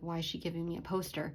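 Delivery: ordinary talk, nothing marked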